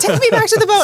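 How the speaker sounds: very high-pitched, scared, freaked-out voice. Retelling how the youngest child reacted to glowing water: imitating Maddie freaking out. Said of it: "she kinda freaked out a little bit".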